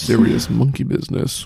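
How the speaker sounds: mock-seductive voice. Chatting with a friend about the Planet of the Apes films, in a put-on sexy voice. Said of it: "Why are you trying to make that sound sexy?".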